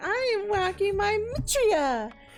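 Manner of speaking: exaggerated over-the-top ditzy put-on voice. Giving a vapid character a voice, in an exaggerated ditzy put-on voice. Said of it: "You just got to give it a voice. Like".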